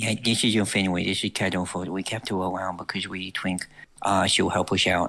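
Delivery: confiding, secretive, hushed stage whisper. Gesturing two others closer in character, speaking in a hushed voice. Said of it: "say in a hushed voice".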